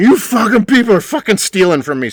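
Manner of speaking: shrill, loud, all-out put-on screaming outburst. Retelling how a man at the bar started at the staff, imitating him screaming. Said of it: "he just starts screaming".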